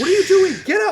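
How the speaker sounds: high, loud, angry, panicked yell.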